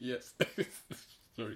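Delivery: breathy speech broken up by laughter. Answering a question while laughing, then apologizing: laughing while talking. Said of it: "I don't know why I'm laughing".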